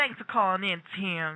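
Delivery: put-on southern American accent slipping in. Recalling thanking a caller named Tim, slipping into a southern accent. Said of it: "I kind of felt it happening to myself too".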